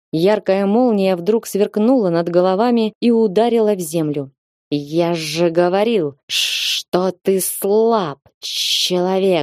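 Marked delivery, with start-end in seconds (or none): 4.7-9.4 very slow, drawn-out demonic hiss. Narrator reads the fire demon's line, spoken right beside a man's ear, hissing. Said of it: "прошипела над ухом".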